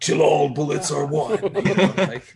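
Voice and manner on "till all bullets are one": acted heroic robot voice. Imagining a talking gun as a kid of the 80s, in an Optimus Prime voice. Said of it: "I think Optimus Prime".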